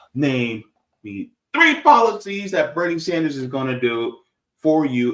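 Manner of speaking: ordinary talk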